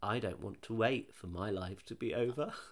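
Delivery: soft, quiet, creepy voice. Retelling how a 4-year-old suddenly spoke up, imitating a creepy child's line. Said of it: "she just really creepily just says".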